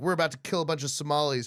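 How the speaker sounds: ordinary talk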